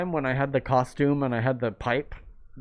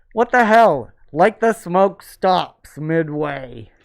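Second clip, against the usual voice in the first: loud, incredulous outburst blurted out. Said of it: "and I'm like".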